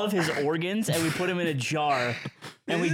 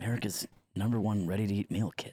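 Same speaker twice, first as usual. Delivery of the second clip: put-on TV ad-man voice; 10 semitones lower, 6 dB quieter than usual. Podcast hosts redo a slogan, said in Don Draper voice. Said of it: "I'll say it like Don Draper".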